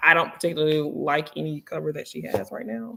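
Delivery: secretive, hushed half-whisper, sounding close by. Speaker reviewing planners, half-whispering as if their maker were present. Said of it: "I'm whispering like she's here".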